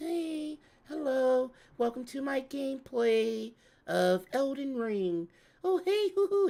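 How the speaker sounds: very high, soft, drawn-out, sensual voice. Imitating VTubers opening an Elden Ring gameplay video, a mock soft, sensual voice. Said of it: "with the soft, sensual voice".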